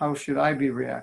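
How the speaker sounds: ordinary delivery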